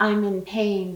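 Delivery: whispering in a woman's voice. Retelling what a woman's voice said, imitating a woman whispering. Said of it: "I heard a woman whisper".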